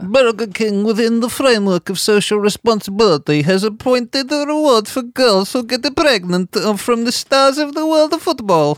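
put-on Russian accent. Reading a translated online post aloud to the others, in a russian accent. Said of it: "shall I do the accent?".

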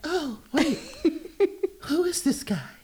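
very high, feathery, pop star falsetto. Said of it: "Let me say it like [name]".

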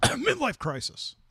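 very high-pitched aside. Retelling a student's remark on his motorcycle: imitating a mutter under breath. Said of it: "under her breath go like".

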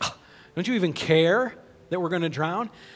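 very loud, high, sarcastic yell. Retelling how they woke him up, mock-sarcastic shouting. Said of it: "shouting, you know, sarcastically".

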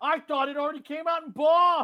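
very high, very loud, belted-out outburst. Continuing a bit, doing an Edie Falco impression. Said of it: "my Edie Falco impression".

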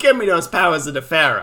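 loud voice in a New York accent. Imagining a villain speaking: Merrick in a New York accent. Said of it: "Merrick in, uh, a New York accent".

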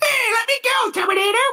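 put-on very high, squeaky young boy voice. Arguing about a movie actor, the speaker mocks him with a squeaky Edward Furlong impression. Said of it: "He's got such a squeaky voice".

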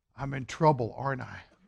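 barely audible, very quiet, hushed voice. Speaker recounts what someone said to him after coming off, very quiet. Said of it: "very quietly said".

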